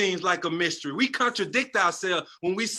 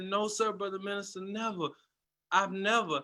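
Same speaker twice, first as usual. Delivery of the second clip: tearful, crying voice, quieter; 6 dB quieter than usual. Retelling own answer to the minister: retelling own crying words. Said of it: "I was crying".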